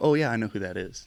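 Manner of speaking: normal talking voice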